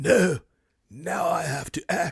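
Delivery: very slow, with every word drawn out. Doing an impression of Keanu Reeves in a sad movie scene: Keanu Reeves impression. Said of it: "here's my impression of him in that scene".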